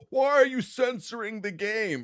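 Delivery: upset outburst, pitched very high. Mocking the gamers who were upset about censorship: mocking imitation of upset gamers. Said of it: "very upset that they couldn't see".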